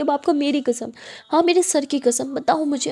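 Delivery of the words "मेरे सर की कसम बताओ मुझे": ordinary delivery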